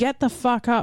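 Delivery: pretend yelling. Joking about talking to lazy patients like toddlers: pretend yelling.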